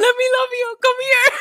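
shrill, loud scream pitched very high. Act out a man chasing wrestling fans, imitating Tony Khan screaming. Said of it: "chasing wrestling fans screaming".

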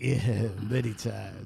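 voice dropped very low and deep. Retelling how the other speaker answered, imitating how he said it. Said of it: "Did you hear the way he said that?".

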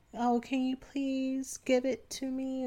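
put-on cutesy babyish voice, soft and high. Demonstrating how one asks someone for something, in a baby voice. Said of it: "I go into kind of like this baby voice".

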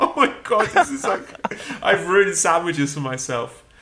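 tearful, high-pitched voice, speaking through sobs. Retelling eating a sandwich on the street, retelling sobbing over a sandwich. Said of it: "each bite sobbing like".

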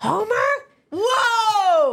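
raspy, very high cartoon voice with a stretched "whoa". Asked to do Marge Simpson, a speaker tries it out: Marge Simpson voice. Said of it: "I've got the voice right now".

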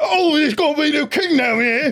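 put-on common British accent. Imitating Britons in newsy caps at the coronation: imitating a British commoner. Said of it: "Britons who are there with their little, like, newsy caps, and they're going like".

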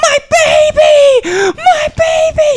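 very high, very slow, drawn-out screaming. Retelling a crash, the driver climbing out: imitating a woman screaming.

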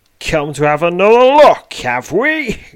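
very loud, shrill, high, scornful, menacing sneer. A narrator voices a knife-wielding stranger confronting the listener, sneering. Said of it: "he sneers".

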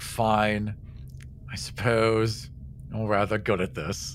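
put-on sighing voice. Recounting how a woman answered in a scene, imitating her sigh. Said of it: "and then she just sighs".

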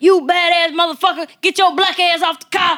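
very high enraged shouting. Retelling how a woman cursed out a little boy on a car: retelling a woman going off. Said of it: "she completely went off".

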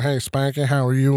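put-on southern Arkansas accent. Retelling a bookmaker's greeting in his office: Mister Green's Arkansas accent. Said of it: "he's from Arkansas. He had this accent".

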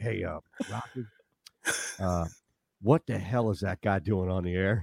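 drawling Southern voice. Retelling what a man said to you, in a slow southern drawl. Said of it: "slower, you know, great southern drawl".

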